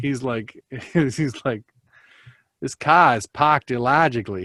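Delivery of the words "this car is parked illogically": terrible put-on Boston accent. Two Texans joke about Leonard Nimoy, imitating him in a terrible Boston accent. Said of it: "do our terrible Boston accents".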